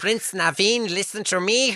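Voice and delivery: put-on very high, loud, belted delivery in German accent. Describing the movie's characters, the speaker voices one: German-accent Lawrence impression. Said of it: "He's German".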